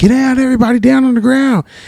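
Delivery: mock, very high, shouted commanding yell. Retelling a swat team jumping out of a van: imitating a swat team yelling. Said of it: "Everyone's yelled".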